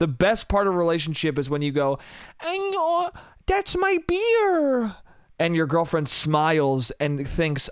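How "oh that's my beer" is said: put-on sky-high, very slow, drawn-out baby babble. Acting out a boyfriend speaking to his girlfriend, in an incoherent baby voice. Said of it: "talking in that in that horrible, incoherent baby voice".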